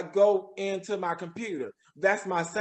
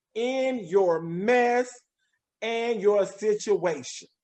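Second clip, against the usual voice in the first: slow, unhurried, deliberate delivery; 2 semitones higher than usual. Repeating advice to listeners so it sinks in, slow and deliberate. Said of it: "I'm going to say that slowly".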